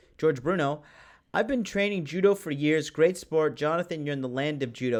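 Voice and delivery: ordinary talk, nothing marked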